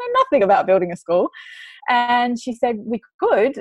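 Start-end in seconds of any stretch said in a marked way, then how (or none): 0.0-1.3 put-on, spoken through laughter. Retelling your own reply to her suggestion, acting out your past laughing. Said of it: "like laughing".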